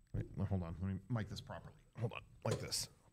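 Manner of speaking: soft, breathy whisper under the breath. Retelling what a friend said while setting up: imitating Johnny. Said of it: "I am gonna do kind of an impression".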